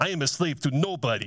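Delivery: put-on with an Eastern European accent. Retelling a man's reaction to their answer, the speaker quotes him in an Eastern European accent. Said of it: "Kind of had that Eastern European accent".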